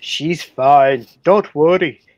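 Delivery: put-on loud, slow Scottish accent. Narrator reading Howard's reply to his wife Elizabeth, in a Scottish accent. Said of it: "the south you're doing a scottish accent".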